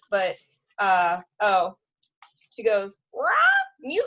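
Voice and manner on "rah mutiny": very high-pitched squawking parrot voice. Doing the parrot's line from a pirate book, in a parrot voice. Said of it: "she thinks that I do a really good parrot voice".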